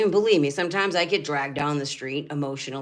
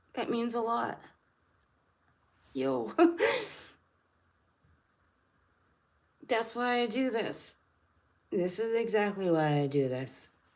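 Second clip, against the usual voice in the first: pitched-up voice, fighting back tears; 8 semitones higher, 4 dB quieter than usual. Telling about being thanked for helping, holding back tears. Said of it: "I'm not trying to cry".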